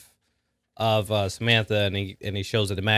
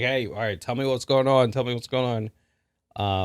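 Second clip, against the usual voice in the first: acted pushy, insistent, prodding and pressing tone; 3 semitones higher than usual. Retelling a movie scene where one character keeps pressing another: imitating someone pushing hard. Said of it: "really, like, pushing on him".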